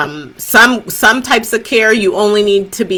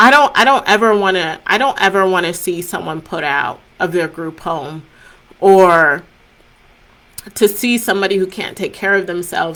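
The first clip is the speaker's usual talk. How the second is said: heartfelt, emotional speech with halting restarts; 3 dB quieter than usual. Speaker wrapping up a talk, getting emotional. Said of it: "I'm getting emotional".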